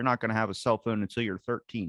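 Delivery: normal talking voice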